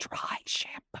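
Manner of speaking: secretive, hushed whisper, barely voiced. Speaker lets the listener in on a secret, whispered. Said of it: "I might just whisper it, and this is my secret".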